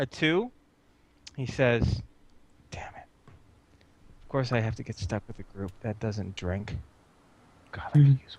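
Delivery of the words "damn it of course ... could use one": barely voiced whispered mutter under the breath. Quoting a man's aside, retelling an under-breath whisper. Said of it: "He whispers underneath his uh underneath his voice".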